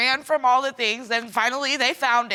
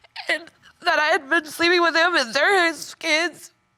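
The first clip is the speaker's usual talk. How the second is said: words pushed out through tears, sobbing hard; 4 semitones higher than usual. Speaker telling the host about the children's paternity, sobbing.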